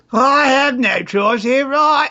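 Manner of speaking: put-on British accent. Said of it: "they've all got British accents".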